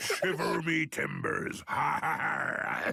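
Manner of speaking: put-on pirate voice. A father pretending to his family he is now a pirate, in a pirate voice. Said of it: "that pirate voice".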